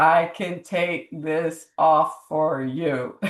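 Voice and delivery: very slow, low, mechanical computer-like robotic voice. Retelling what a man said to him, in a slow computer-like voice. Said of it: "he said it like a computer and slow".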